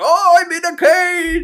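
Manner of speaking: ogre voice, pitched very high. Retelling a game story, the speaker acts out the ogre trapped in a cage: impression of the ogre. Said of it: "I'm very good at impressions".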